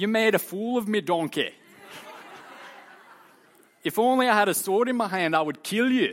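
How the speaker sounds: high-pitched cartoon ogre voice. Reading Balaam's reply to his talking donkey, in a Shrek voice. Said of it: "That's my best Shrek voice".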